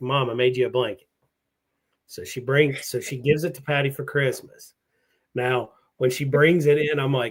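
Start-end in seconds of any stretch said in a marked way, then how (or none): none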